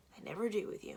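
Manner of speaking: muttered under breath. Reading a story, a mother grumbling an aside: muttering under her breath. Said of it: "mutters under her breath".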